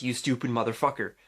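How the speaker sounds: ordinary talk, nothing marked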